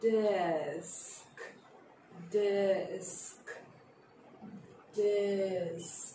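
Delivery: slow, soft, deliberately drawn-out desk. Teacher modelling a word for the children: saying the word slowly. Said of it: "say it slowly".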